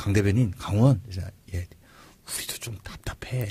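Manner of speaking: quiet, low, soft, confiding whispered aside.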